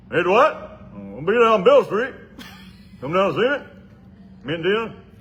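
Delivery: very high, very loud hollering voice. Showing off his impression, calling to Dwight: Robert Washington impression. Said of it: "Robert Washington, I'm really good at Robert".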